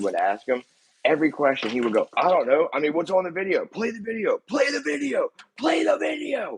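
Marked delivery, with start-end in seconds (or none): 2.2-6.6 put-on hostile shouting, high and rising. Retelling how the witness answered the attorney's questions: imitating a witness screaming. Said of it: "He's screaming at, like, my attorney".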